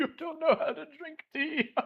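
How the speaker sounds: very high-pitched beggar voice with chuckling. Voicing a beggar mocking a player splashed with tea: chuckling beggar. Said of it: "the beggar just starts to kind of chuckle".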